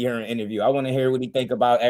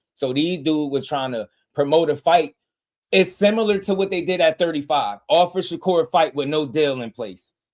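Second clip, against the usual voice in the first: ordinary talk, nothing marked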